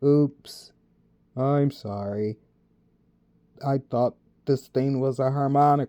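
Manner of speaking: dragging, deep, slow monotone drone. Narrator voicing Mark as he speaks at the microphone, Mark's dragging monotone drone. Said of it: "still in that dragging voice".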